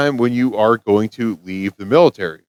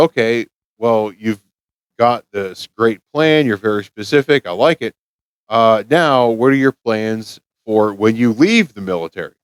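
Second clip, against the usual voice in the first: ordinary delivery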